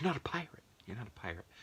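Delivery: fast, angry rant, rattled off. Retelling a movie scene where one character goes off on another: imitating Vince Vaughn's angry outburst. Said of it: "Vince Vaughn goes off on him and he's like".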